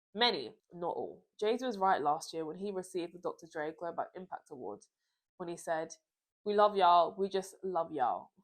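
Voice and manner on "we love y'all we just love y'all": put-on American accent. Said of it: "My American accent".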